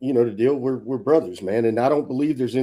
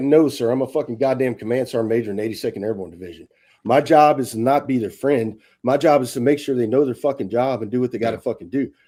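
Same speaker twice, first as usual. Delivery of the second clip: ordinary talk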